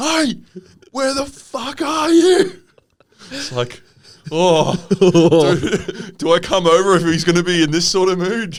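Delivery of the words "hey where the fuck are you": play-acted very high, drawn-out angry yell. Recounting a phone call after leaving a party, imitating Tom yelling. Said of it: "Tom just yelling at me".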